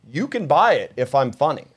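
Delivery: ordinary talk, nothing marked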